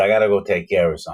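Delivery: imitated Brazilian accent. Retelling what a man said after locking the speaker in, Brazilian accent. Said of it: "this Brazilian accent".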